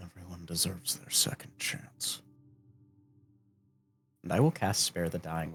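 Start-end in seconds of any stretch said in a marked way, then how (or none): 0.0-2.2 hushed, muttered whisper under the breath. Voicing a massive warrior after a kill: whispering under his breath. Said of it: "he whispers under his breath".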